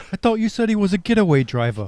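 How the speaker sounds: bad fake Cockney accent. Acting a movie scene about a getaway driver, put-on British accent. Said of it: "Apologies for our British accents".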